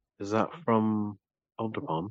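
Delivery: discreet, low-key private aside. Narrating a woman who notices the player's gauntlet, asking in a very quiet voice. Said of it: "very quietly asks".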